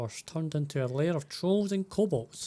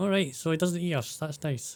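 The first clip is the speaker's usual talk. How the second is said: ordinary delivery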